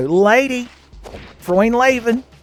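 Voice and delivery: high, wildly swooping comedian voice. Imagining a famous comedian playing the game: Jerry Lewis impression. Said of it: "If Jerry Lewis were playing this game, he'd be like".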